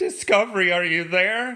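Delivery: high, loud tearful crying out. Retelling a scene where Michael Burnham calls Discovery: imitating Michael Burnham crying. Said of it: "Starts crying".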